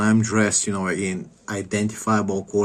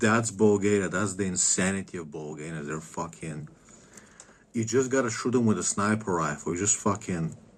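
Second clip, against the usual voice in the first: plain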